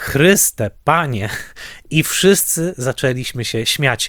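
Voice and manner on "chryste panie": mock half-scared, half-amused woman's exclamation. Retelling how a woman in the theatre balcony called out during the film; retelling a half-scared, half-amused cry. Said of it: "powiedziała dokładnie takim głosem".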